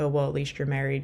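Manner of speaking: normal talking voice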